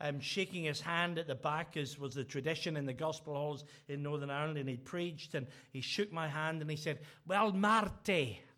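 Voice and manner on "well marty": loud put-on Scottish accent, not very good. Retelling how a Scottish evangelist greeted him after preaching: imitating John Spears' Scottish accent. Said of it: "that's my Scottish".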